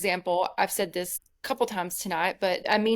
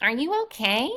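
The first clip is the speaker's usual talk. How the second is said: deliberately annoying, irritating tone; 5 semitones higher than usual. Showing how people can ask if you're okay, in an annoying tone. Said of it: "in a very annoying way people can say".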